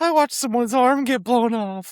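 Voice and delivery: put-on very high cartoon kid voice. Imagining how a traumatized character would say a line: Simpsons "I'm in danger" kid voice. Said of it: "he kinda sounds like the kid from the, the Simpsons".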